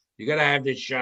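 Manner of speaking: plain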